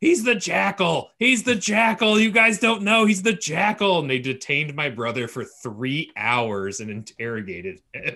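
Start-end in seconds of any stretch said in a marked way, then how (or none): 0.0-4.0 mock shrieking, very high, loud, repeated scream. Retelling how a friend at airport security accused someone, imitating someone screaming. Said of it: "starts screaming".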